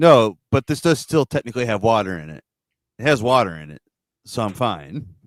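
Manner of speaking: dry, dead-serious, deadpan delivery, no joking. Retelling what someone said to the speaker's face about drinking soda, deadpan. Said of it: "He deadpan was like".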